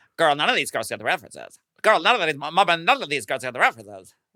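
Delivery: breakneck, impossibly fast, high rapid-fire rattle. Retelling a contestant's remark on a drag competition show, Plasma speaking impossibly fast. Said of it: "speaking impossibly fast".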